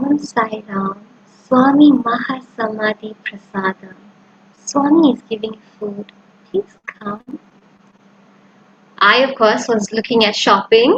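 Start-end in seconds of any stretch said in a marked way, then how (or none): 0.0-7.4 softly spoken, soft voice. Retelling what an uncle said near the shopping center after darshan, in a soft voice. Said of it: "in a soft voice".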